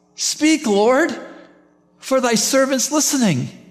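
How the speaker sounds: put-on high-pitched little boy voice. The speaker quotes the boy Samuel from the Old Testament in a little boyish voice. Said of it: "Can't you hear that little boyish voice?".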